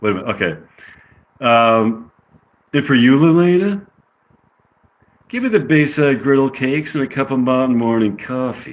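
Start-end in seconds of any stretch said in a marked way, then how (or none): 5.3-8.7 put-on, attempted California accent. Ordering breakfast from Lelena, in an attempted California accent. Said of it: "Is that what a California accent sounds like?".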